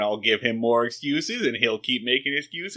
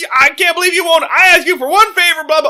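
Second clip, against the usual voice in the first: squealing, shrill, very high, very loud tantrum; 10 dB louder than usual. Retelling a TV scene, imitating a character throwing a fit: Barney Fife throwing a fit. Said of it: "Barney's just throwing a fit".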